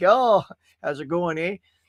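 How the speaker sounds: put-on Canadian accent. Recounting replies to people calling out Canada: fake Canadian accent. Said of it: "I had to keep keep it straight".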